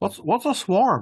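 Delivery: muffled, talking with a full mouth. Asking another player what a swarm is, mouth full of gummy bears. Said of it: "What happened to [name]'s voice?".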